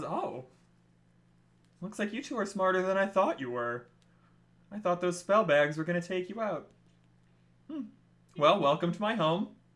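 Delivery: gentle, soft-spoken, welcoming host-like tone. Narrating a scene, speaker voices Missus Johnson at the door, gentle Missus Johnson voice. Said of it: "you hear a gentle voice come from the door".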